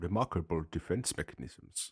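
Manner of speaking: put-on hushed, very quiet murmur, faint German accent. Narrating a story, voicing the amused doctor's comment: Doctor Nehring, faint German accent. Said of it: "a faint German accent".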